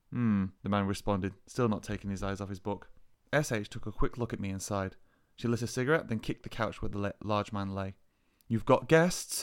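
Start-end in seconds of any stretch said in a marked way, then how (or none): 8.4-9.4 spitting, biting delivery. A woman kicks the couch where a man lies reading, spitting the words. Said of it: "she spat".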